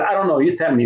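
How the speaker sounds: plain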